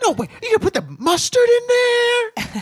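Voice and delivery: very high, loud, giddy amazement, drawn-out there. Imitating a video reviewer reacting to food: imitating someone getting excited. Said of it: "all excited about".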